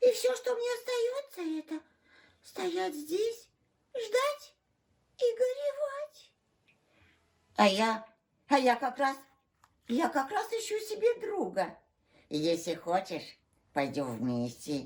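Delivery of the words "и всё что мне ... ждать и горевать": crying, tearful voice while speaking. Answering someone who asks why you are crying: crying while speaking. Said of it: "Тогда почему же ты плачешь?".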